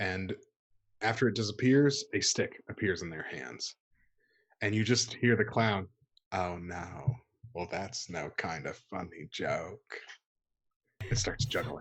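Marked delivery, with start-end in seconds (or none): 6.3-10.0 soft-spoken TV host voice, low and hushed. Telling a story and voicing the clown, Mr. Rogers voice. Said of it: "It's my Mr. Rogers voice".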